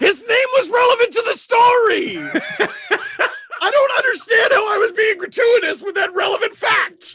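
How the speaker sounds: high, loud, laughing and indignant.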